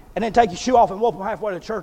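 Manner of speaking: normal talking voice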